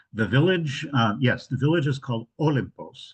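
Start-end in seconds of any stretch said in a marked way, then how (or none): 2.4-3.2 Olympos with stress on the first syllable O. Naming the village she will visit: stress on first syllable of Olympos. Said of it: "accent on the first syllable".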